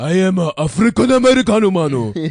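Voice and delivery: very loud, high put-on Japanese accent. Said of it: "That's Japanese".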